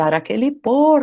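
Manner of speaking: enraged, angry outburst, shouted. Retelling a story where a man started shouting, retelling a shout. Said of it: "Ele começou a gritar".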